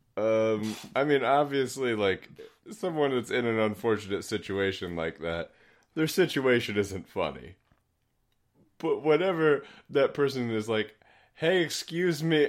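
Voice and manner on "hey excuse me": artificially friendly tone with raised pitch. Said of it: "the artifice of the friendly stranger".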